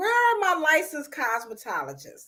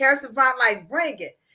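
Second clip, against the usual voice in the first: usual speaking voice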